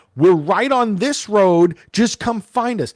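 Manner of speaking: shouting, high pitched and loud.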